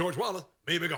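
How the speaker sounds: preachy sermon delivery. Contrasting a politician's normal and church delivery: imitating Obama's preacher delivery. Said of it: "talking like a preacher".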